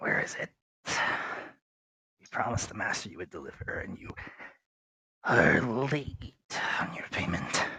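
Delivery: hushed, gravel-voiced whisper. Narrating a game, the speaker voices a figure behind a door, gravelly voice. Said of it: "you hear a kind of a gravelly voice".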